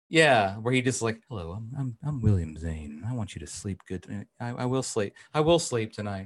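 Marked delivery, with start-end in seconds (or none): 1.2-6.2 ASMR voice like a sleep track. Imagining a bedtime sleep app, voiced as Billy Zane: Billy Zane ASMR sleep voice. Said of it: "a voice sleeping app situation where he just talks to you when you're going to sleep".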